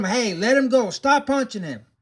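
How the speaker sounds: acted firm calling out. Retelling yelling at a youth punching another youth: imitating a yell. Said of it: "but I yell at him".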